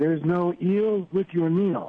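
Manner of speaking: put-on velvety, smooth newscaster voice. Retelling a colleague's remark on the 11 o'clock show, in Harry Porterfield's velvety voice. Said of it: "in his velvety voice goes".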